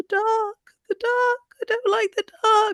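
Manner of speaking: very high, whining, whimpering voice. Retelling a game session, voicing a child ghost: retelling a ghost's whimper. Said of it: "whimpering about".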